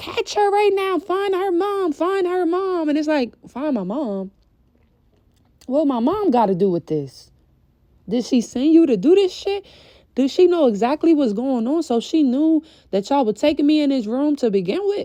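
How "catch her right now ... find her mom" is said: shouted repeatedly, pitched up. After breaking out of the room, retelling the uncle yelling, retelling the uncle's yelling. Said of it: "my uncle was yelling".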